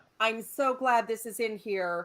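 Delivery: ordinary talk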